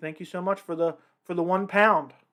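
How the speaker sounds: ordinary delivery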